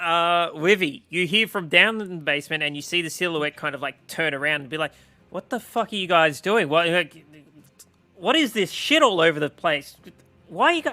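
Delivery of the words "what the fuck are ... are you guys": baffled, confused, bewildered tone. Voicing a figure in the basement who turns around on the group; confused. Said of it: "Absolutely confused".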